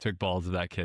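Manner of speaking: ordinary talk, nothing marked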